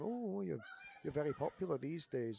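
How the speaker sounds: put-on condescending, talking-down tone. Retelling what people said about the pirate gimmick, imitating a patronizing tone. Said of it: "in a really patronizing way".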